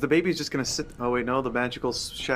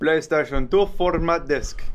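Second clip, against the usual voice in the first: Indian-sounding accent in a man's voice; 4 semitones higher, 5 dB louder than usual. Reading the show's sponsor spot as the co-host teases him, with an Indian-sounding accent. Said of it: "You say it like the Indian man or something".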